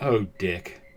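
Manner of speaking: disappointed, let-down, reproachful tone. Imitating an old man looking at his son, disappointed parent tone. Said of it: "He's not pissed off at the ruined carpet".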